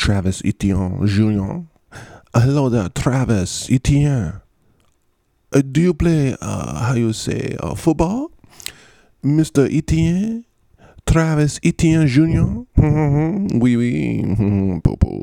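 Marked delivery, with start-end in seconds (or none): 2.3-14.2 high-pitched put-on French accent. Talking about a team's running backs, greeting one of them in a put-on french accent. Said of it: "in a French accent".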